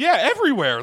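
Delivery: play-acted frantic, shrill, high, loud panicked blurt. Retelling how another person in the room answered: imitating panicked speech. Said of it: "like, panicking".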